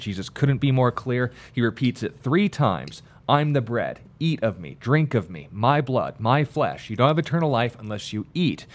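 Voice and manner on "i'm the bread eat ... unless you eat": ordinary talk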